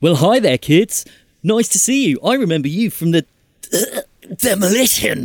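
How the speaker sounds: spluttering between coughs. A game master voicing a character trying to greet the kids normally: coughing and spluttering. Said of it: "Lazarus coughs and splutters and says".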